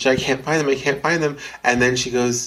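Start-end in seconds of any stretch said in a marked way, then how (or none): 0.2-1.4 mock tearful sobbing, repeating words while crying. Retelling a movie scene where Allison searches for keys: imitating Allison crying. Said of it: "and she's crying".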